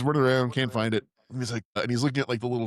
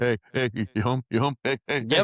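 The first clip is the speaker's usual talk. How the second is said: needy, jittery, urgent, frantic, desperate pleading tone. Retelling a movie scene, imitating a desperate addict at the door. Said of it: "crackhead knock on the door".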